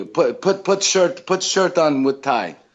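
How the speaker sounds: mock broken Italian accent. Retelling what a man told him to wear, in a broken italian accent. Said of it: "he has like this broken Italian accent".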